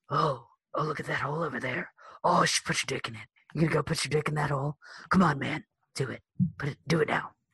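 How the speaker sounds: coaxing, hushed whisper, close to the ear. Retelling a character egging on the kid, Maury's whispering voice. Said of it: "Maury's always whispering to the kid like".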